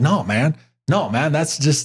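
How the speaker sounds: ordinary delivery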